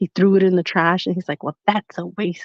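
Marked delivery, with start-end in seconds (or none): 1.4-2.5 irritated, fed-up, annoyed tone. Retelling someone throwing an opened test in the trash: imitating someone angry. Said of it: "He was, like, so mad".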